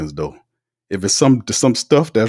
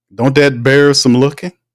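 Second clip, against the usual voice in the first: ordinary talk, nothing marked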